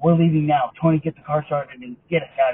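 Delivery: scary, strong, authoritative commanding tone. Retelling a grandma ordering tony to leave: imitating a commanding, authoritative voice. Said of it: "authoritative voice".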